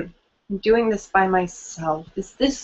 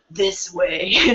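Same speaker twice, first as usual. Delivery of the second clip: really spooky, eerie haunted-house ghoul voice; 4 dB quieter than usual. Retelling what a man said when the speaker was lost, spooky voice. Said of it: "said in a really spooky voice".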